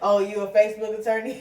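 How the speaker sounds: ordinary talk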